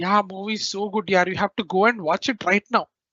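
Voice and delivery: said sarcastically. Showing how a sentence about a movie sounds: sarcastic way. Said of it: "if we say it in a sarcastic way".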